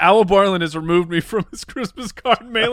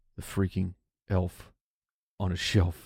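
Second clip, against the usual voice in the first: low, hushed whisper under the breath; 13 semitones lower, 10 dB quieter than usual. A parent introducing a holiday tradition, fearing the children are listening, whispering. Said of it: "I have to whisper".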